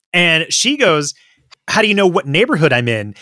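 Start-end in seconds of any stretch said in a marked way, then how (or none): none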